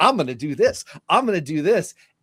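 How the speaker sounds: high, keen, gung-ho eager tone, acted out. Imitating freshly elected members of Congress arriving: imitating eager enthusiasm. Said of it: "all bright-eyed and bushy-tailed".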